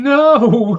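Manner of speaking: loud, high, drawn-out sobbing wail. Voicing a character who breaks down when asked if he is all right: sobbing. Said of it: "And he starts sobbing".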